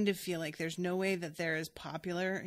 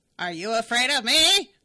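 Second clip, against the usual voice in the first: crazy put-on voice, much louder; 5 semitones higher, 14 dB louder than usual. Describing how a man on the show always sounds, doing his crazy put-on voice. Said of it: "the voice was so crazy".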